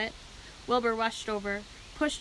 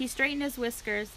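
ordinary delivery

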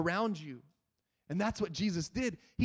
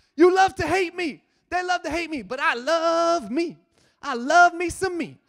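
put-on yell, higher and louder; 8 semitones higher, 8 dB louder than usual. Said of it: "he starts yelling".

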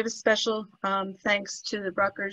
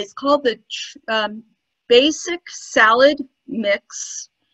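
slow, careful pace, much slower. Speaker repeats a name for the listener, saying it slowly. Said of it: "I'm going to say it slowly".

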